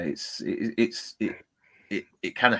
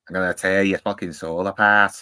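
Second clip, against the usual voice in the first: put-on Scouse accent, louder; 5 dB louder than usual. Imitating an actor's real voice: Pinhead in a Scouse accent. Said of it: "he's a Scouser".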